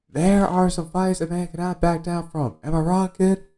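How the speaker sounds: shrill, very high-pitched, loud shout. Retelling a scene from a show, imitating Boodle yelling. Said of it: "Boodle keeps yelling".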